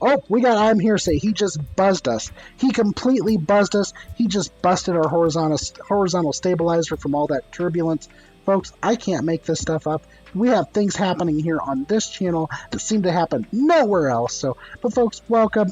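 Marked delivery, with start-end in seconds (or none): none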